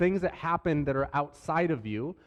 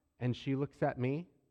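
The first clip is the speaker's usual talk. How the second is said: plain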